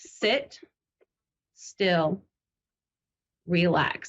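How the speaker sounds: play-acted, flat, no-nonsense, matter-of-fact monotone. Retelling what a guiding spirit woman said: imitating a matter-of-fact monotone voice. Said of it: "her voice is very matter of fact and, like, monotone".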